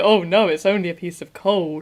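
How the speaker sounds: put-on American accent, very low and deep. Recreating her monologue in thirty seconds, in a deep American voice. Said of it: "like the American and deep voice to say".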